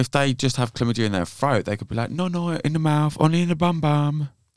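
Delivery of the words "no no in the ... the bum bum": high, crazy put-on Spanish accent. Imitating someone telling a partner where to go: put-on Spanish accent. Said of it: "talking to a Spanish person in that mad accent".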